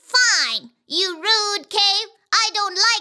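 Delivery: ordinary delivery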